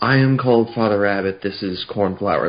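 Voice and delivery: put-on comforting tone. Showing how a character's introduction should sound, imitating it calm and comforting. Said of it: "saying it like a calm, comforting voice".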